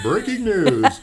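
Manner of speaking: very high, loud, put-on radio broadcast voice. Speaker gets a radio voice going: radio announcer voice. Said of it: "let me get my radio voice going".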